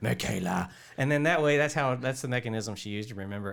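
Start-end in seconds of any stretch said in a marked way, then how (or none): 0.0-0.7 put-on beastly creature monster voice. Retelling how a film character repeats a name: imitating a monster voice. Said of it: "she would talk in monster voice".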